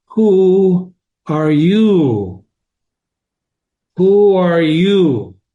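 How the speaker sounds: drowsy, lazy caterpillar drawl, "you" drawn out. A storyteller voices the caterpillar in the story, languid, sleepy voice. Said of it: "he says in a languid, sleepy voice".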